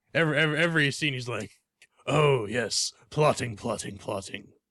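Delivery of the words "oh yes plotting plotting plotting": strange rasp in the voice. Complaining about a show character in every scene, doing Peter Baelish's high raspy voice. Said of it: "with his really weird, high pitched, raspy voice".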